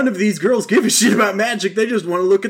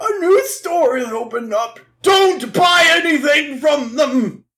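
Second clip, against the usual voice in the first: put-on grandpa voice, higher; 8 semitones higher than usual. Retelling an episode, imitating Yugi's grandpa. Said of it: "then Grandpa's all like".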